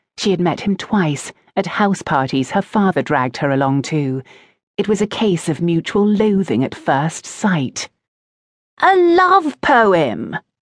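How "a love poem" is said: very high, swooping, gleeful, delighted shout. A boy she loathes exclaims to her, shouting with delight. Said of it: "he shouted, clearly delighted".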